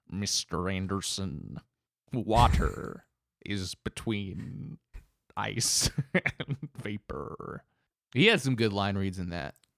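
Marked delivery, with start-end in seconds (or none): 0.1-7.6 very slow, deliberate villain voice, every word dragged. Trading lines from The Matrix, deliver it in a Mr. Smith voice. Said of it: "You did a good Mr. Smith voice".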